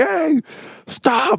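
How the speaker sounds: put-on rowdy, very high hooting holler. Retelling friends yelling at a buck to stop: imitating others hollering. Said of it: "start hooting and hollering".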